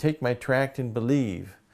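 mock screaming, acted-out yell. Retelling a story of a man screaming while throttling another: retelling a man screaming. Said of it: "he's screaming".

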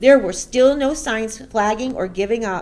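ordinary delivery

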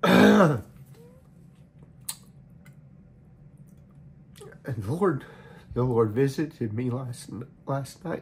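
voice holding back tears. Speaker addressing the family with a word for them, holding back tears. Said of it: "I'm trying not to cry through the whole thing".

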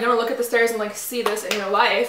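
ordinary talk

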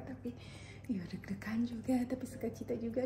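soft whisper.

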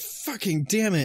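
high, pissed-off tone. Describing what they do when they lose in a game, acting out the angry reaction, pretending to be pissed off. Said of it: "when you're pissed at a game".

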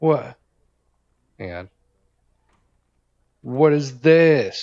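loud, mad, demanding outburst. Streamer reacting to something found while playing Call of Duty, mad. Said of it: "I'm so mad right now".

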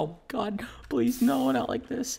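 mock frantic, panicking outburst. A YouTuber describing how they really react when losing: acting out own panicking. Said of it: "I'm just like panicking and I'm like".

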